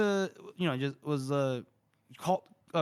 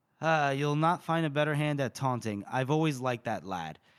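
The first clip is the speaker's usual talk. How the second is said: ordinary delivery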